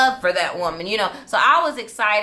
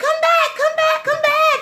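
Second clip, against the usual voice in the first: mock giddy, very high-pitched excited shouting; 3 dB louder than usual. Retelling calling after his passing car, own past excitement. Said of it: "I was excited".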